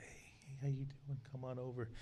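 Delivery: very quiet, hushed delivery. Retelling greeting a child while playing Santa, retelling speaking very quietly. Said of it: "So I'm really quiet".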